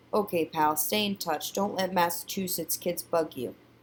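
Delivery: plain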